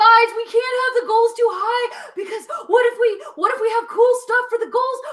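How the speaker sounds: high, loud, panicked wail. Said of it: "I was like".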